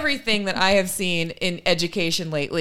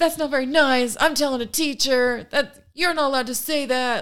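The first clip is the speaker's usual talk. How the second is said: high, furious, angry meltdown screaming; 8 semitones higher than usual. Retelling how he reacted to the kids making fun of him: imitating someone screaming.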